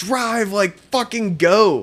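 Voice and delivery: put-on high, drawn-out terrified scream. Retelling being chased by lights in the woods: imitating own past screaming. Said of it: "So we're screaming, like".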